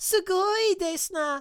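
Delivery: typical anime character voice, very high. Streamer saying a Japanese phrase for chat, in a typical anime voice. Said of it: "the typical uh, uh, anime voice".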